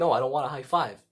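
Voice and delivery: plain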